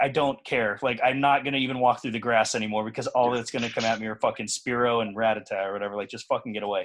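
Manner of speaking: ordinary delivery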